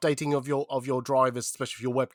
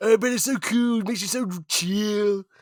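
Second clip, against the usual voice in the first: laid-back, pitched-up beach surfer dude voice; 8 semitones higher, 3 dB louder than usual. In a joke bit about being offered a puff, answer in a surfer dude voice. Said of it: "surfer mode".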